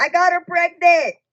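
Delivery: mock shrill, very high, overjoyed shout. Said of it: "yells that".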